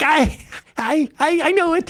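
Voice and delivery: very slow, high, eager know-it-all insistence, drawn out. Imitating a classmate who always rushed to give the answer: imitating Emma as an eager student. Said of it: "Emma in school was always the one going like".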